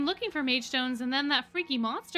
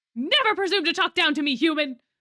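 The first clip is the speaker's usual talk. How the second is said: shouting; 3 semitones higher, 6 dB louder than usual. Answering a request to be quieter: yelling. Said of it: "keep it down if you keep yelling".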